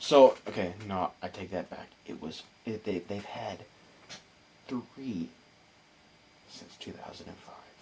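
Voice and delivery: speaking in a whisper. Correcting an earlier statement to another speaker, whispering. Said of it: "Why are you whispering?".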